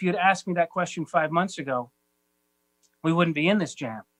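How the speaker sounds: ordinary delivery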